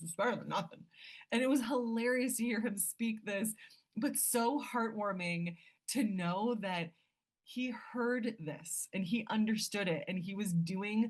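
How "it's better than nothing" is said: put-on small boy with deep voice. Repeating a little boy's favourite saying, imitating his deep voice. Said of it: "He has a really deep voice".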